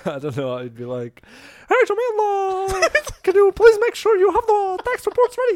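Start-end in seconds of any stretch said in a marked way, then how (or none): 1.7-5.6 very high, squeaky cartoon voice, one word stretched out. Asked to imitate a boss said to sound like Mickey Mouse: imitating boss's Mickey Mouse voice. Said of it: "I had a boss who sounded like Mickey Mouse".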